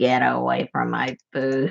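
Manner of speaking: very low, rough, nasty snarling dog-like growl. Acting out the small dog warning others off its plate: growling dog voice. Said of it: "he'll growl at them like".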